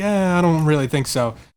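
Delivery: ordinary talk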